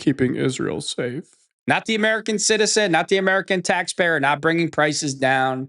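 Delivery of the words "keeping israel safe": big, dramatic, theatrical delivery. Imitating Dan Bongino answering about his greatest FBI accomplishment: dramatic Dan Bongino impression. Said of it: "he gets all dramatic like he is".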